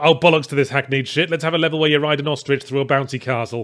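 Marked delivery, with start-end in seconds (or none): none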